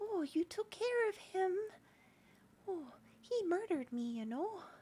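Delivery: little, tiny ghost gnome voice. Narrating a scene, voicing the little ghost of a gnome. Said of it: "this little ghost of a little gnome".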